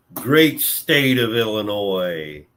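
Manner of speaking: sarcastic. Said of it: "You notice my sarcasm".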